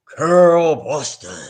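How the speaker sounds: big, loud, booming man's voice. Retelling a man greeting her as she walks into the room, imitating Barry's booming voice. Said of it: "this man with a big booming voice goes".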